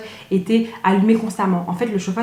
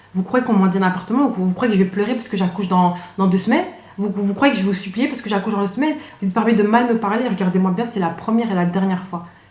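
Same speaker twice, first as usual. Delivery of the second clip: plain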